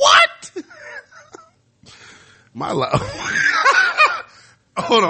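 laughing fit while speaking.

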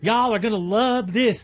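put-on Southern accent, woman voice. Retelling what a woman in a recipe video said: imitating a Southern woman. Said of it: "She's a Southern woman".

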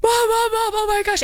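mock, very high, frantic, panicked screaming. Retelling a girl on the phone as the second plane hits, retelling a panicked scream. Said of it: "And they start screaming".

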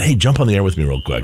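normal talking voice

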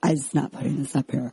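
fed-up, thoroughly disgusted tone. Retelling what Juan said about the video: imitating Juan, disgusted. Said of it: "He was thoroughly disgusted".

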